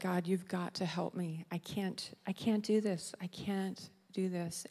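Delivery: crying out desperately. Retelling praying aloud while driving home sobbing: retelling crying out. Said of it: "I was just crying out".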